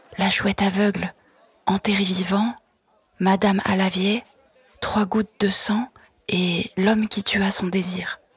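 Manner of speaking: quiet voice, very close. Answering a street vendor, imitating him, lowered voice near his ear. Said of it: "en baissant la voix d'un ton et je lui glisse presque à l'oreille".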